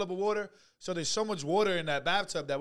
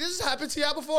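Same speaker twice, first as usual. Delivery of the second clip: high, panicky, alarmed, disbelieving tone; 8 semitones higher than usual. Retelling a woman trying to fix an overflowing toilet, imitating a panicked voice. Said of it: "you hear the panic of her voice".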